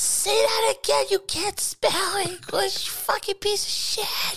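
put-on ghostly whisper. Joking about haunting the other speaker after death: put-on ghostly whisper. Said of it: "you're gonna hear whispers like".

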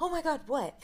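high-pitched, dramatic reaction. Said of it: "she's so dramatic".

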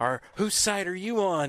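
heavy put-on German accent. Retelling how a woman answered the door holding a bayonet rifle, in thick German accent. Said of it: "with this thick German accent".

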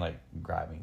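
normal talking voice

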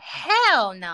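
hostile, antagonistic, dismissive hell no. Asked whether they were married to their ex, answering hostile. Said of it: "Why so much hostility in that hell?".

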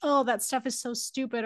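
ordinary talk

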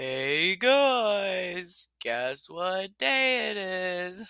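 very slow, dragged-out put-on camel voice. Retelling a commercial where a camel walks in: imitating the commercial camel. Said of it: "the camel walks in and he's like".

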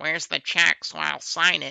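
put-on creaky character voice. Imitating someone asking where the check is to sign, Martha Ford voice. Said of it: "do my Martha Ford voice".

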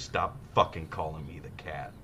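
mock, breathy, irritated, annoyed whispered gripe. Retelling what a broadcaster said off air, not knowing he was live: imitating someone angrily complaining. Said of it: "He goes".

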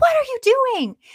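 shrill, high, loud, frantic scream. Retelling a myth where the queen finds her baby in the fireplace: imitating someone screaming. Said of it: "she's screaming and flipping out".

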